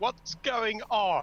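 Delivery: slow, high-pitched yelling. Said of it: "Zarzul's gonna yell out".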